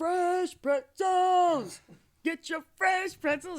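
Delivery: loud, very high, drawn-out street-vendor call. Retelling how pretzel sellers called out back then: imitating a pretzel vendor's call. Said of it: "everybody that sold pretzels back then would be like".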